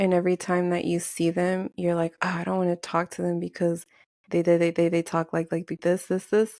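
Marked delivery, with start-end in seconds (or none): none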